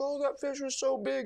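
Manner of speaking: high, tearful, blubbering, bawling sob. Retelling a lady crying in the boat after losing a fish: imitating a bawling woman. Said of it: "and she is bawling".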